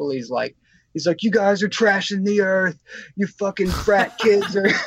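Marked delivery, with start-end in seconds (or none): 1.2-4.7 acted-out screaming, higher pitch. Retelling a hippie screaming at all these people: imitating a screaming hippie. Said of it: "this hippie starts screaming at all these people".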